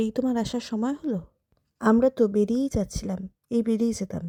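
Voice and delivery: ordinary talk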